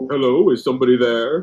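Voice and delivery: slow parrot voice calling out like a bird. Telling how a parrot called out while walking the dog, imitating a parrot's talking voice. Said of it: "They actually mimic the fucking voices".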